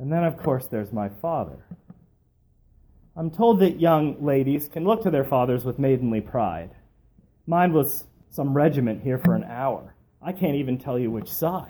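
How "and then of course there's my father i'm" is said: plain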